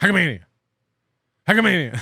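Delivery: rapid-fire, words tumbling out, very fast. Host saying the event name as fast as he can for comedic effect: very quickly. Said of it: "I'm going to say it so quickly".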